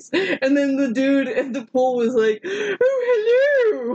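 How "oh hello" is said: very high "oh hello" with "oh" stretched out. Retelling how a man at the pool called back, the speaker uses a Mrs. Doubtfire voice. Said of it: "Like a Mrs. Doubtfire voice".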